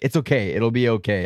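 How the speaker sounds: ordinary talk, nothing marked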